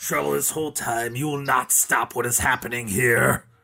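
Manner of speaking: growly, growling werewolf voice. A game master voices a werewolf sauntering up to the players; growly werewolf voice. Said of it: "This is a little bit more growly sounding".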